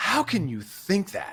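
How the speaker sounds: scornful, contemptuous voice, swooping and drawn out. Showing a contemptuous way to enter a disagreement: contemptuous voice. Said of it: "then there's a contempt voice".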